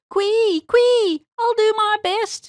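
high, loud, slow squealing pig voice. Narrator reads the pig Mrs. Twistytail's reply: Mrs. Twistytail squealing. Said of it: "Mrs. Twistytail squealed".

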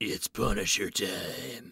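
low, hushed, growly comic-book voice. Opening a comics podcast segment: growly voice. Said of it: "Growly voice".

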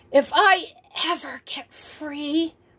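whispered. Ralph, trapped while Liza works at the lock, speaks: whispered. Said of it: "whispered Ralph".

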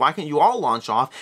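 normal talking voice

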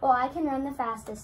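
usual speaking voice

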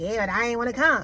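mock sassy attitude. Retelling how a girl answered an officer who called her back, mimicking attitude. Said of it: "with all this attitude and everything".

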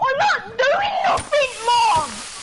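high, loud shout with swooping pitch. Streamer answering mom during a game, shouting at mom. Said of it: "You think I'm shouting?".

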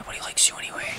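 unvoiced, whispered jab.

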